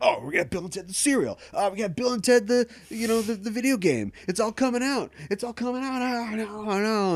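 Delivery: high-pitched, frustrated, freaking-out ranting voice. Retelling an old interview, imitating Keanu Reeves flipping out. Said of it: "Keanu Reeves is, like, flipping out, and he's like".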